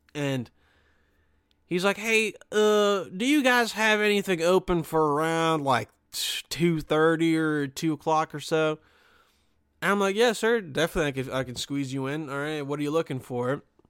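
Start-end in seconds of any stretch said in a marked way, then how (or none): 1.9-8.7 put-on slow southern drawl, higher, slower. Retelling a call from an older southern guy to the spa, imitating a southern accent. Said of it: "southern guy calls".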